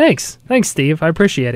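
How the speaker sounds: sarcastic delivery. Thanking Steve after being told he was funny: sarcastic. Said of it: "sense the sarcasm there".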